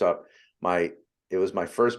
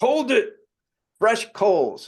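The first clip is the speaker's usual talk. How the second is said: put-on very high, shrill, loud, swooping shout; 5 dB louder than usual. Retelling a firewalk instructor stopping him: imitating T Harv Eker's loud deep voice. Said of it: "loud, deep voice".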